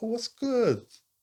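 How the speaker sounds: mock very high, friendly, cheery voice. Retelling how a man greeted them: imitating a smiling greeting. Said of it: "he's come all smiles".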